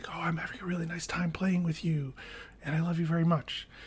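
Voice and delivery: hushed, very soft whisper. Speaker acts out what they whisper to her while playing together, whispering. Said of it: "I'll whisper something really nice".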